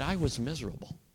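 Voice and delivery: put-on sheepish tone. Retelling a woman's answer after being teased: imitating a sheepish reply. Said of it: "she smiled at me a little bit sheepishly".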